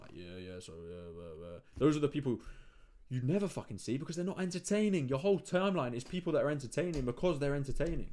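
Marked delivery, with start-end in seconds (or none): 0.1-1.6 low, flat, dull, level monotone drone. Imitating boring creators who talk into the camera: imitating a monotone talker. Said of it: "talk with a monotone accent".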